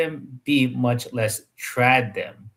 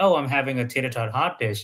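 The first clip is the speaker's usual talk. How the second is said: ordinary talk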